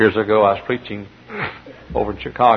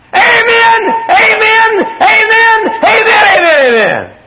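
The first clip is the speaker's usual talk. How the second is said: small, very high voice, loud shouted "amen". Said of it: "he looked up and he said".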